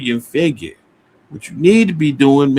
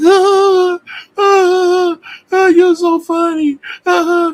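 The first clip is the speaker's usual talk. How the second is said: very slow, high hysterical laugh, long drawn-out ahs; 3 dB louder than usual. Retelling how a woman reacted to him: imitating someone laughing hysterically. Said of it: "she was always screaming and cracking up, laughing".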